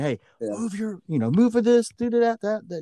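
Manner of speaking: put-on, high, far-carrying coaching yell. Retelling instructions yelled at kids on the field: imitating own coaching yell. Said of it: "I'm yelling".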